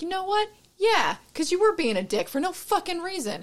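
high, wide-swinging exasperated voice.

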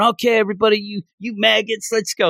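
play-acted, high, loud yelled delivery. Retelling how the Ironworks instructor starts out: imitating the instructor yelling. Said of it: "like, yelling that".

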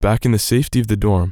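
ordinary talk, nothing marked

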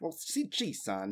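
slow, put-on old-timey fifties transatlantic accent. Answering a question about the voice, using a 1950s dad transatlantic accent. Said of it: "You're going for, like, the transatlantic?".

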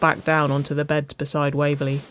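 plain

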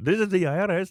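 put-on Indian accent, very high, shrill, loud. Retelling a scam caller claiming to be the IRS, imitating an Indian accent. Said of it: "a guy like with an Indian accent".

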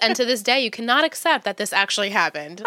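usual speaking voice

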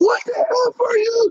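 very high, furious, angry yelled outburst. Retelling how a man at a restaurant was flipping at a lady: imitating a man yelling angrily. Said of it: "this one guy's just flipping at this lady".

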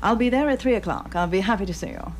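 put-on old-time, period American accent, dated-sounding. Showing how actors go back in time from standard american: old-fashioned american accent. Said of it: "and then to go back in time sometimes".

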